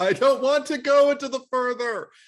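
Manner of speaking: piercing, shrill scream, very high and very loud. Retelling screaming out loud during a movie scene: imitating own scream. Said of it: "I screamed out loud".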